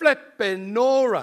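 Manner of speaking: booming, very loud, high-pitched shout. Speaker recalls James shouting out when things went badly, retelling a shout. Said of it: "would shout out".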